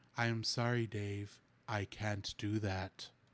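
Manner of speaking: slow, flat, emotionless monotone delivery. Imitating how HAL talked, without much emotion: flat emotionless HAL voice. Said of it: "He just talked like this".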